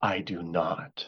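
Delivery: very low, hushed whisper under the breath. Retelling a wedding where the groom answers the minister's vow question, whispering. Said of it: "And he whispers".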